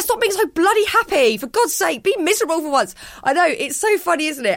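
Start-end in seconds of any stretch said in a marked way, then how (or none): 0.0-2.9 high, irritated, fed-up, exasperated outburst. A wife acts out what she says to her calm husband, acting out irritation. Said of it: "I'm irritated by his calmness".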